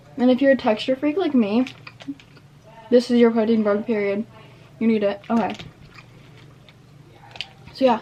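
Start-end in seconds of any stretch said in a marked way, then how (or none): 2.9-8.0 speaking with mouth full of food. Speaking to viewers about a snack while eating it, talking with mouth full. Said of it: "I'm talking with my mouth open. Full".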